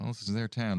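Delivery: muttered quietly under the breath. Voicing Riku in a role-play scene, speaking under his breath. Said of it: "Riku says under his breath".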